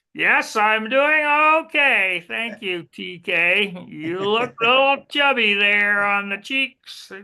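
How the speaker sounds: high puppet voice. Voicing a puppet who answers another speaker's greeting: Furry Murray puppet voice. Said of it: "say hello to Furry Murray".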